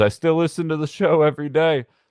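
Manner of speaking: loud, high-pitched yelled scream. Retelling a man on a bicycle who spotted him, imitating the scream. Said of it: "just screams".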